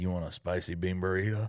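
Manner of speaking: sudden put-on Southern US accent. Retelling what a woman said, imitating her Southern accent. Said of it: "she just gained a Southern accent".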